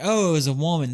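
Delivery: put-on Southern debutante voice. Retelling a reading, the speaker quotes him switching voices, imitating a Southern debutante. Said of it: "talking like a Southern debutante".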